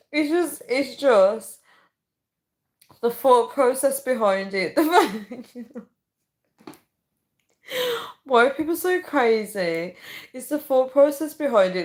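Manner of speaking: talking through laughter. Reacting to viewers' comments, laughing while talking. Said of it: "I actually can't stop laughing".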